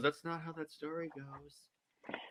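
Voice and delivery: slow, very quiet mutter under the breath. Acting out a kid in a Greek myth class: muttering under her breath. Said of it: "under her breath".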